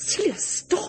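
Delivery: hissing voice, pitched very high. Narrator reading a novel voices Graham telling Celia to stop: hissed. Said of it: "Graham hissed".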